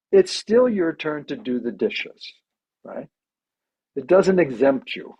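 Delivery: ordinary talk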